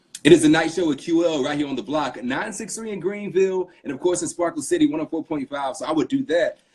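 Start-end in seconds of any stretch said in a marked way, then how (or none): 0.2-5.7 on-air radio DJ voice, pitched up. Showing how they sound when doing something live on the radio: radio voice. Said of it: "I have a radio voice".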